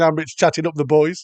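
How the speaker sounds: usual speaking voice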